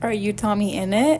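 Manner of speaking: ordinary talk, nothing marked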